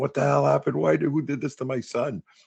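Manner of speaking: mock high screaming. Retelling how their mom saw their bruised back, imitating an old Italian mom screaming. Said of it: "old Italian mom's just sitting there screaming".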